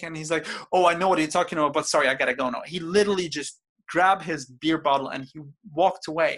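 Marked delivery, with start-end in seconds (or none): 0.7-2.6 fast, panicky, hurried speech. Retelling what he said before walking away: imitating panicked speech. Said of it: "That's how panicked he was".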